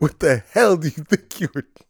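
acted furious cop voice. Retelling how the highway cop came up to the car: imitating an angry cop. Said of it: "he comes up pissed".

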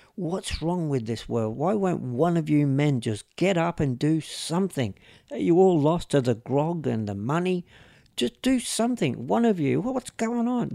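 put-on angry, cranky pleading rant, rising in intensity. Retelling a video of an elder calling out angrily: imitating a cranky, angry woman. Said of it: "She's really cranky and pissed off".

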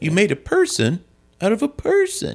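very high, slow, swooping storybook reading voice. Quoting a movie trailer line as Will Smith, in a Will Smith voice raised to sound young. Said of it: "sounds like he's reading a Doctor Seuss book".

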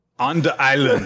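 put-on Jamaican-style accent and inflection. Echoing the other host's phrase back, with a Rastafarian inflection. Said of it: "Did you intentionally do that with the Rastafarian inflection?".

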